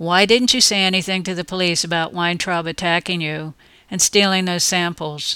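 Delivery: plain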